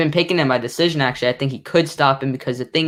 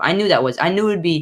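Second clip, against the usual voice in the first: ordinary talk, nothing marked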